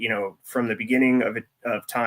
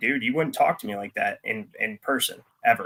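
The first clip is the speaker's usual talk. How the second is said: ordinary talk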